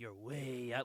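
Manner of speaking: put-on drawling raspy voice. Describing a voice actor's delivery of a comic line: Keith David drawl. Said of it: "a drawl to his voice where he's like".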